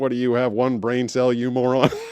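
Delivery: synthetic, robotic text-to-speech computer reading voice. Retelling hearing their own comment read back, imitating a text-to-speech voice. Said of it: "the text to speech voice is like".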